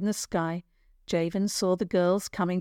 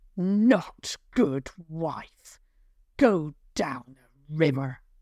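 grating, raspy troll voice; 3 semitones lower than usual. Narrator reading a troll speaking to his wife, loud raspy troll voice. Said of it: "The troll's voice was a loud rasp".

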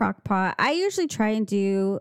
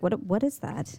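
ordinary talk

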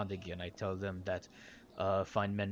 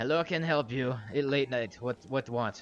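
put-on loud broken-English accent, woman's voice; 4 semitones higher, 6 dB louder than usual. Voicing a Dragonborn woman answering the door late at night: Dragonborn woman's broken accent. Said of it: "She goes".

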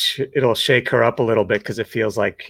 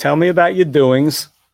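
put-on old granddad voice, high and raised; 5 semitones higher, 5 dB louder than usual. Quoting a saying of Granddad's: imitating Granddad. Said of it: "the granddad one that I was thinking of".

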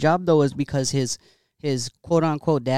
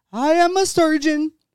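mock screaming, higher and louder; 13 semitones higher, 5 dB louder than usual. Retelling a tv show scene where a doctor screams at a guy: imitating someone screaming. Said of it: "screaming at the guy".

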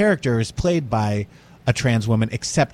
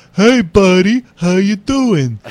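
very loud, slow, drawn-out old cartoon voice; 9 semitones higher, 9 dB louder than usual. Describing a film's murderer, quoting his line in a Warner Brothers cartoon voice. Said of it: "uses this voice that sounds like a Warner Brothers cartoon".

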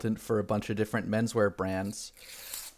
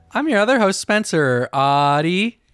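booming, loud, high robotic announcer voice, one word stretched; 7 semitones higher, 10 dB louder than usual. Introducing oneself as the other host: put-on robot voice. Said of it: "I'm a robot, and that's how I say my name".

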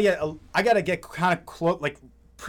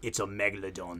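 hushed, quiet, put-on British accent; 8 semitones lower, 11 dB quieter than usual. Retelling a cheesy shark movie, voicing a character in a put-on British accent. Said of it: "in his fucking British ass accent".

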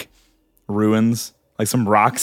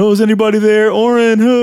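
high, loud cartoon calling-out voice; 11 semitones higher, 6 dB louder than usual. Retelling a game character shouting around after waking: Sonic the Hedgehog voice. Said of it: "he has his fucking Sonic the Hedgehog voice".

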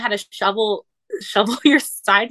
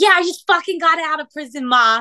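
terrible fake Boston accent, pitched up; 6 semitones higher than usual. Quoting a guy just out of prison: bad put-on Boston accent. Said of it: "I'm about to fucking terribly do a Boston accent".

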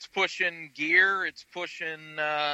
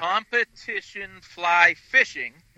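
slow, loud, deliberate, drawn-out, spelled-out phrasing; 2 semitones higher, 5 dB louder than usual. Asked to slow down, the speaker repeats a phrase for listeners: speaking slowly. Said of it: "let me slow it down".

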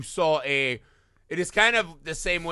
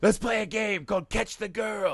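unhinged, deranged villain voice, pitched up; 6 semitones higher than usual. Retelling a horror movie scene with the doctor taunting the killer: Donald Pleasence voice. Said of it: "Dog Day Afternoon Donald Pleasance".

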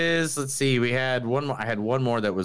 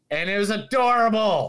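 ordinary talk

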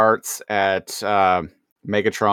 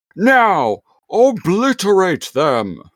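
commanding tone, very high and swooping; 10 semitones higher than usual. Recapping a Beast Wars scene, the speaker quotes Megatron's order in a commanding Megatron voice. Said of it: "in a very like commanding voice".

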